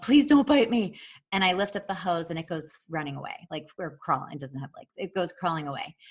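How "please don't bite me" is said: high, very loud, raised shouting. Retelling reaching down for a hose near a snake, retelling own yell. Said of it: "and I'm yelling".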